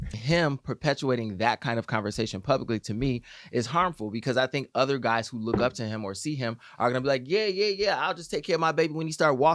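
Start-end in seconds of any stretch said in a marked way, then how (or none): 7.3-9.6 put-on offhand street-guy voice, pitched up. Imitating guys who look up to him, in a put-on voice. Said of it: "Why you talk like that?".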